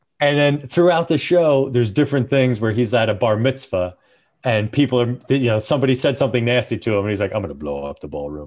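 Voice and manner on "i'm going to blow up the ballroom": put-on character voice, much lower and quieter. Describing a show character answering someone nasty at a bar mitzvah, in Bane voice. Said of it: "in that voice".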